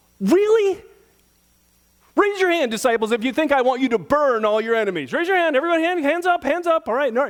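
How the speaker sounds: mock exasperated, fed-up, high-pitched, at-wits'-end voice. Acting out a teacher asking disciples to raise hands: imitating frustration. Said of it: "how frustrated he was?".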